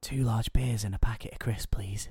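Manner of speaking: hushed whisper. Telling the joke's punchline, the man repeating his order in a library: whispering. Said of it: "the man whispers".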